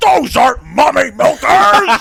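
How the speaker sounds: indignant, drawn-out, rough-edged, high, loud, outraged. Retelling online comments, doing an impression of a guy: imitating an angry commenter. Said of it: "I had an impression of a guy being like".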